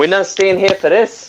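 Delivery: put-on high Italian accent. In a group conversation, the speaker does their best Italian accent impression. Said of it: "that's my best Italian impression".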